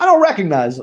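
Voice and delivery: dry, unfazed, dead-straight deadpan delivery. Retelling a movie scene, without batting an eye: imitating Christopher Walken deadpan. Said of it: "without, like, bla-, batting an eye".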